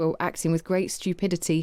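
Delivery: ordinary delivery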